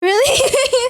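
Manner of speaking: very high, loud, laughing, surprised squeal on "really".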